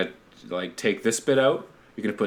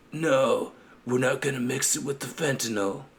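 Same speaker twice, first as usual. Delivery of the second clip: badly done Italian mobster accent; 3 semitones higher, 3 dB quieter than usual. In a conversation, the speaker attempts a bad Godfather impression. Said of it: "That was my best like Godfather".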